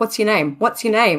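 harsh, insistent mock grilling, said twice. Imitating a detective asking a rescued girl her name: imitating a harsh questioner. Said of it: "the guy who asked her name was really harsh".

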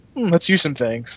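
normal talking voice

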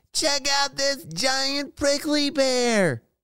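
very high-pitched, calling-out yell. Narrator voicing a character calling to Mom and Hazel, yelling. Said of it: "yelled Harvey".

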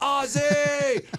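high-pitched shouting, calling yell. Retelling yelling by the dugout for an autograph, imitating own yelling. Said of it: "just yelling".

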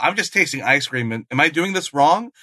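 ordinary delivery

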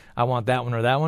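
usual speaking voice

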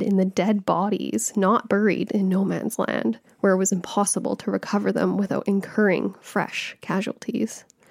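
ordinary talk, nothing marked

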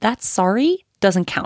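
pissed-off, firm, angry scolding tone. Retelling what she told someone who hit and then apologized, retelling her angry words. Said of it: "And I was so pissed".

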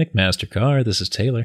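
polished customer-service phone-line answering voice. Asked by the other speaker to do it again: McMaster-Carr voice. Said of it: "to do your McMaster Car voice".

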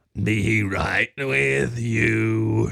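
very slow, rough gurgling creature voice, drawn-out "you". Reading a story, the narrator voices the bread golem in the kitchen: gurgling voice. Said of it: "the bread golem gurgled".

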